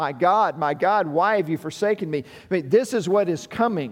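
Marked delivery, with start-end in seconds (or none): none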